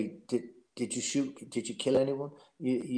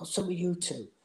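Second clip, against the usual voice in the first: put-on, pitched-up voice calling across; 5 semitones higher, 4 dB quieter than usual. Speaker retelling shouting over to two arguing men: retelling own shout. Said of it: "And I shout over to him".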